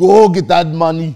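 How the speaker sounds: put-on Nigerian accent. Trading accents with others, the speaker tries out a Nigerian accent. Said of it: "That's the Nigerian girl's voice".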